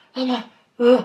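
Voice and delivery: put-on strained choked voice, barely talking. Retelling struggling to talk after a scare: imitating a strained voice unable to talk. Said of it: "had to relax my larynx to be able to talk".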